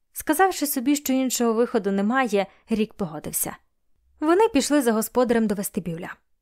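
plain

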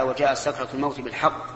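normal talking voice

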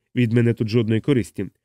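plain reading voice

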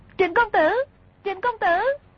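very high, rushed, frantic, panicked cry. A woman, held and too weak to break free, calls out, crying out in panic. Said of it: "Hoảng sợ kêu lên".

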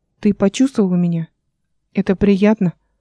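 plain

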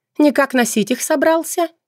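taunting, scornful voice. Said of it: "Насмешливо спросила женщина".

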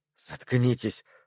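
hissed through clenched, gritted teeth. Perry, hearing knocking at the door, hisses at the others through clenched teeth. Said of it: "прошипел Перри сквозь стиснутые зубы".

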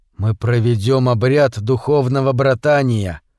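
plain

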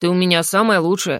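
ordinary delivery

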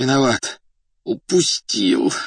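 muffled groan. An injured agent sitting on the pavement, head bleeding, muffled groan. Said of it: "глухо простонал он".

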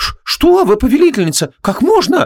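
very high, aghast, horrified outcry. The maid Miali answers her mistress Vanessa's question, horrified. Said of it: "ужаснулась Миали".

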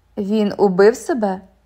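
usual speaking voice

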